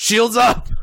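shrill, high, sudden shouted yell. Retelling a scene where Riker walks up and yells: imitating Riker yelling. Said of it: "Riker takes one look at him and yells".

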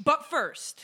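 commanding, authoritative announcer tone. Moving the conversation on to the next topic: authoritative tone. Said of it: "saying that like with a really authoritative tone".

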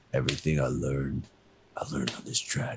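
whispered put-on low voice. Retelling a movie scene, a father speaking to his son at a racetrack: whispered movie-dad impression. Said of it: "You just whispered".

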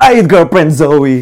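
sudden shrieked outburst, very high and loud. Retelling an auntie's outburst after dropping her bowl: imitating auntie's blurted exclamation. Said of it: "she dropped it and goes".

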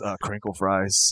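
low, soft, dazed, spaced-out rambling. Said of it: "just kinda staring out the window, going".

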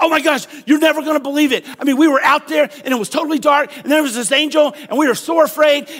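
high, loud, put-on rattled-off rush of words. Acting out shepherds bursting through the door to the new dad, talking fast and loud. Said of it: "talking real fast, and they're talking real loud".

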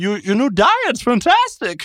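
Pennsylvania accent, very high, swooping, slow, stretched out. Bantering about a previous impression, Pennsylvania Christopher Walken impression. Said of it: "a Pennsylvania Christopher Walken".

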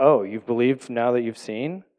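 play-acted snide, sarcastic, disbelieving tone. Rereading Jesus's words as a sarcastic question, a mock-sarcastic question. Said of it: "a sarcastic question like this".

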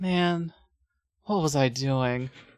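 put-on worn-out, drained, tired, weary delivery. Recapping a story scene, quoting her line and mimicking a tired delivery. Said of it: "Where she sounds so tired".

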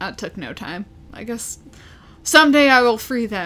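ordinary talk

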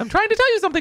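very high, loud, shrill squeal, climbing in pitch. Playfully pressing a question to the other speaker: voice rising higher and higher. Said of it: "As I get higher and higher in my voice".

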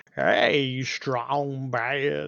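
dopey, goofy, stupid put-on dumb voice. Reminiscing about an 80s character, the speaker imitates his stupid voice. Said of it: "he had that stupid voice".

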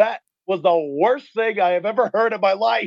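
light, put-on yell. Retelling heckling a band at the end of their set, retelling a yell. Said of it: "I just yelled".

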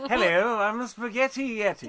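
put-on dignified, stately British accent. Playing a wrestler called the Spaghetti Yeti: dignified British accent. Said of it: "a British accent is dignified".

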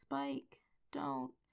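small, hushed, very quiet little voice. Recapping a scene, quoting one character's line to another: small little voice. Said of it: "Buffy says in this little voice".

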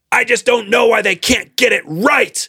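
very high-pitched, shrill, exasperated shout. Retelling what a woman in the theater said: imitating a woman shouting. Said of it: "she shouted as the credits were rolling".

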